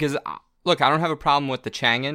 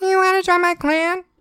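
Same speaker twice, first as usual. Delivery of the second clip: acted high-pitched youthful voice; 5 dB louder than usual. Retrying a gamer's line after being told it needs a higher voice, in a high-pitched voice. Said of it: "You're not saying it in a high enough voice".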